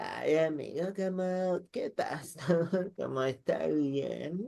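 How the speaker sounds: put-on very slow, boozy, drunken posh drawl, young woman's voice. Retelling how a very drunk upper-class girl approached at a party: imitating a drunk posh girl. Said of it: "está muy borracha, muy curada, y como que se acerca así como".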